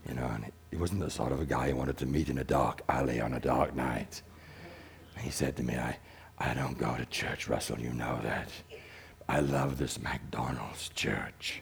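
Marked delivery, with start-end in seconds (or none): 6.4-11.6 soft, rough, gravel-filled rasping voice. Retelling what a man once said to him, in a gravelly rough voice. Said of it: "he had a really gravelly voice ... he spoke like this".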